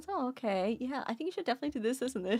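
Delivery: mock chill, unbothered tone. Retelling how another teammate answered during a heist: imitating someone sounding relaxed. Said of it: "He sounded like he was chilling".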